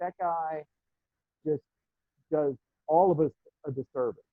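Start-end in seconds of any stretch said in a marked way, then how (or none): none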